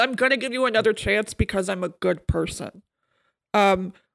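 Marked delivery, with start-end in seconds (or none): none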